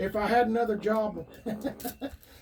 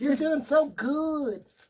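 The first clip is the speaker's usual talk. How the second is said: high, gushing, cheery encouraging tone, "good" drawn out; 6 semitones higher, 3 dB louder than usual. Imitating the other speaker's praise: imitating the other speaker. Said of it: "Let me imitate you".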